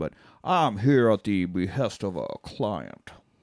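exaggerated put-on Southern drawl. Retelling a movie private investigator's answer about why he's there; Foghorn Leghorn voice. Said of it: "he sounds exactly like Foghorn Leghorn".

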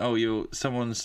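ordinary talk

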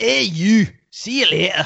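very high-pitched put-on Scottish accent. Saying see you later in a little accent for the others: attempted Scottish accent. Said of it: "That's the best I could do".

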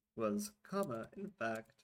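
ordinary delivery

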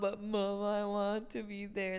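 put-on childlike crying, sobbing, tearful pleading. Retelling begging mom to stay at gymnastics: imitating own childhood crying. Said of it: "cry and sob".

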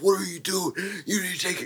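mock, high-pitched, loud yelled delivery. Retelling a bodybuilder at a rally yelling at people: imitating a man yelling. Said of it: "he was yelling at people".

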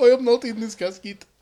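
put-on generic Indian accent, laid on, high and loud. Playing the man everyone thinks is dead, in a generic Apu voice. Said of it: "Just go with the generic fucking Apu voice".

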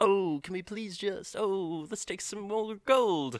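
bad put-on British accent, a bit high-pitched. Recounting a movie, acting out greedy Jonathan in the temple, bad British accent as Jonathan. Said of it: "I'm not good at British accents".

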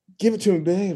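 high, seductive tone. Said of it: "I just pictured [name] as [name] going".

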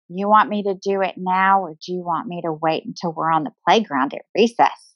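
usual speaking voice

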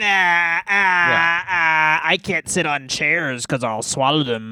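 put-on grizzled old woman voice. Joking about an aged wrestler's new persona: put-on grizzled old woman voice. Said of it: "you have to talk like this".

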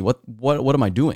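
ordinary delivery

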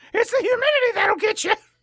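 put-on British woman voice. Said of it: "Why is this a Monty Python character?".

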